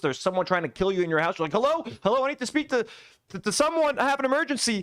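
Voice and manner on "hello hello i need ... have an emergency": high, frantic, panicked voice stumbling over words. Acting out an imagined emergency caller with an intruder: imitating a panicking caller. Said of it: "panicking, scared shitless".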